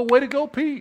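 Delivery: loud, high-pitched cheering. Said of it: "I wanna go".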